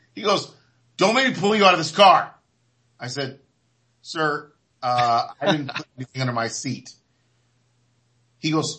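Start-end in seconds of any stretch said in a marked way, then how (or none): 1.0-2.3 put-on fast, high-pitched yelling. Recounting being pulled over by a young cop, retelling the cop's yelling. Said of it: "you're yelling at me".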